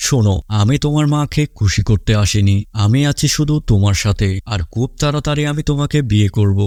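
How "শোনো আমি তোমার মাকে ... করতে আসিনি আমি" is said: usual speaking voice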